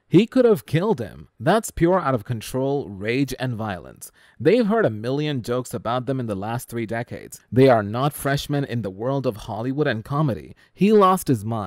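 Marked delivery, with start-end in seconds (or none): none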